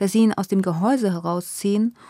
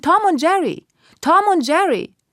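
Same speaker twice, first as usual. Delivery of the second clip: mock shrill, loud, repeated screaming; 9 semitones higher, 5 dB louder than usual. Telling the girls how Nina phoned reception, retelling Nina's scream. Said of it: "angerufen und geschrien".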